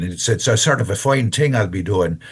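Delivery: put-on Northern Irish accent. Demonstrating accents in conversation, doing a Northern Irish accent. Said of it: "if I'm doing Northern Ireland".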